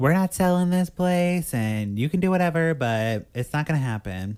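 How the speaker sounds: loud, sassy, put-out comeback. Retelling what a character says at a meeting: imitating a sassy retort. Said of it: "pretty sassy".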